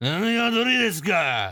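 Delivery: long, high, stretched-out, furious street-thug yell. Showing how a delinquent would say the Japanese phrase; really mad elongated yell. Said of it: "If you were to do it in the delinquent mannerism".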